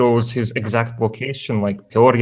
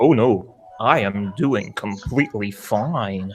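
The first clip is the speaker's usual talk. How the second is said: mocking, sarcastic calm, very slow and drawn out. Retelling someone's reply when the police called him: mocking imitation of sudden calm denial. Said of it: "he's like".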